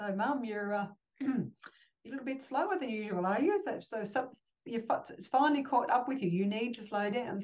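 put-on, playful teasing through laughter. Retelling how family teased about a slow, fractured foot: imitating family laughing and teasing. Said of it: "my family's laughing, going".

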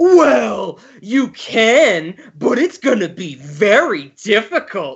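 mock passive-aggressive, slow, swooping sarcasm. Retelling a fourth-grade teacher's answer about a book report, imitating passive-aggressive teacher. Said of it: "it was so passive aggressive, so sarcastic".

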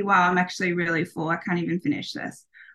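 ordinary talk, nothing marked

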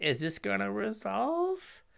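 slow, high, tentative, doubtful tone. Showing how an unconfident player announces a spell: unsure questioning tone. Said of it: "instead of putting a question like".

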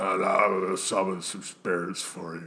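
careless, bad, low-effort, just-rolled-out-of-bed lazy voice. Imitating a man who claims to be the son: bad imitation of a lazy son. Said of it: "that's a bad imitation of him".

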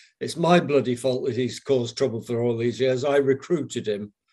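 emphatic delivery, proclaiming to the whole room. Retelling what an old recruiter announced to everyone there: imitating a very loud announcement. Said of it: "announced in a very loud voice".

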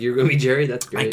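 ordinary talk

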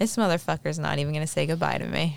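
normal talking voice

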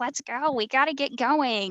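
mock screaming. Speaker recalls him hurrying everyone out the door late, imitating someone screaming. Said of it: "he's like screaming like".

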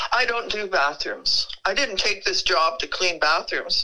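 ordinary talk, nothing marked

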